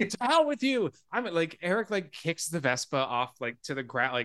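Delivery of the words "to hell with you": very high, shrill scream while chewing, mouth full. Retelling a screaming match, speaker acts out the boss chewing a sandwich, mock-screaming. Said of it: "while he's chewing on a sandwich, also screaming".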